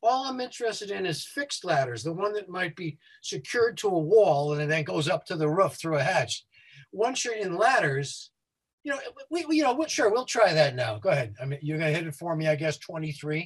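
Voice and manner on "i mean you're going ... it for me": fast, rushed, rattled-off speech. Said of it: "the only reason I'm talking quickly".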